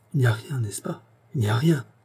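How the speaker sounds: halting, shivering, shuddering stammer. An anxious boy questions his adoptive parents, stammering with a shiver. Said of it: "il balbutia avec un grand frisson".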